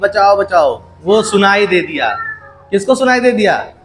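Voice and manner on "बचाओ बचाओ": ordinary delivery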